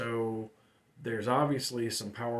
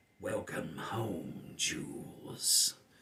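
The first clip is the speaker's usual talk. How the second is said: put-on low, eerie, creepy old woman's voice; 6 semitones lower, 3 dB quieter than usual. Retelling a game where the player Tina hears a voice in her head: creepy old woman's voice. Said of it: "it's this creepy old woman's voice".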